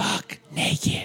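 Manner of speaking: echoing voice. Speaker recalling a late-night radio commercial's repeated line, echoey voice. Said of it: "you'd hear the echoey".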